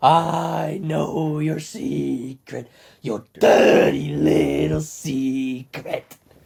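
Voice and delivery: loud, very slow drawl, I stretched out. Quoting a scene from the film: Pennywise voice. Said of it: "I love my Pennywise impression".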